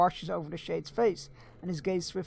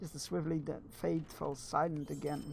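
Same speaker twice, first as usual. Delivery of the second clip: ordinary delivery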